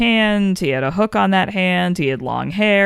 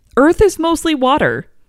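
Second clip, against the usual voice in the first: high, loud, excited and insistent. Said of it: "And I'm like".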